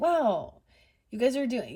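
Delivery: play-acted, backhanded, needling passive-aggressive tone. Retelling a passive-aggressive comment: imitating a passive-aggressive compliment. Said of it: "passive aggressive pokes".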